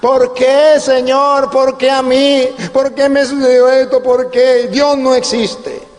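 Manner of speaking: mild, scared, frightened crying out. Imitating frightened people who cry out to god: imitating people shouting in fear. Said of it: "comienzan a gritar".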